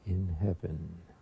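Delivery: speaking very softly. Showing how a prayer leader brings everyone out, very soft voice. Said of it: "I'll say it very softly".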